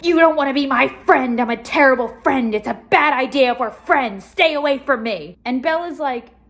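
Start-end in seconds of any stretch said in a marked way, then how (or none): 0.0-5.4 play-acted aggressive, insistent yelling. Retelling how Edward yells at Bella: imitating Edward yelling. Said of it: "he's just yelling at her like".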